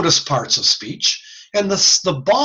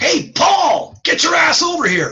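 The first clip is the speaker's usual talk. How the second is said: shrill, very high hollering yell; 13 semitones higher than usual. Explaining the loudest parts of speech, demonstrating yelling across the street. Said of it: "if I yell".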